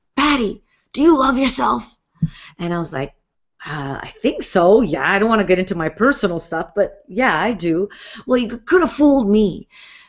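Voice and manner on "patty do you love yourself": put-on raunchy voice, higher pitch. Recounting a man stopping the music mid-dance to question her, imitating a really raunchy voice. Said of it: "really raunchy voice".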